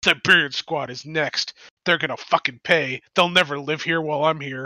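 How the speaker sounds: sounding bitter. Showing the group how easy it is to sound like a bitter ex. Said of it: "If I want to sound like a bitter ex, all I'd have to do is be like".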